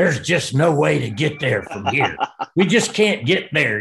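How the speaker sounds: rough, grinding gravel voice. The longtime Georgia broadcaster talks about getting to Fayetteville, in a gravelly Larry Munson voice. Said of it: "I can hear his gravelly voice right now".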